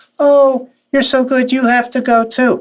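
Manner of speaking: piping, very high-pitched, excited gushing voice. Quoting what she said urging the speaker to audition too, imitating her very high voice. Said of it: "she had this very high voice".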